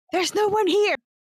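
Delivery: very high, slightly loud voice. Answering a groaning creature that says it knows you're up there, said a little loud. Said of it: "I will say that a little loud".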